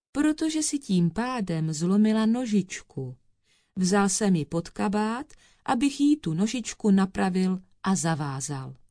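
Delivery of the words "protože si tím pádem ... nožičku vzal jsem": plain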